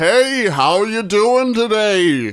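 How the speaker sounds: high, announcer-style voice like a TV announcer. Showing another person how Don Pardo just talked in everyday conversation, in a Don Pardo impression. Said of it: "That's just how he talked".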